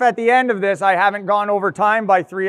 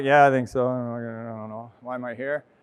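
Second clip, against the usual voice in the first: unenthusiastic, lower, quieter; 8 semitones lower, 6 dB quieter than usual. Speaker demonstrates how an audience member might answer their question, unenthusiastic. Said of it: "a little bit of enthusiasm goes a long way... I'm not that inspired".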